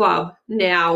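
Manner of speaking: plain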